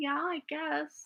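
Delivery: shy, quiet, timid, barely committed little voice. Retelling being put on the spot about a crush: imitating a shy, quiet reply. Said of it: "very shy, quiet eighteen-year-old girl".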